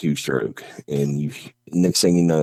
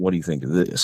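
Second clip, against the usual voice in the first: mock sarcastic, challenging tone; 2 semitones higher than usual. Retelling own past words out in the woods: imitating a sarcastic remark. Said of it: "me being sarcastic".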